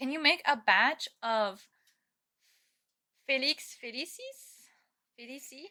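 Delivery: read in a put-on French accent. Reading a line aloud, in a french accent. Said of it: "I read it in a French accent".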